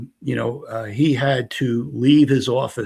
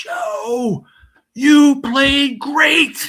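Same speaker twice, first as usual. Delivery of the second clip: mock very high, drawn-out holler; 6 dB louder than usual. Retelling praise called out as the speaker ran off court: imitating someone yelling. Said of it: "he yelled at the top of his lungs".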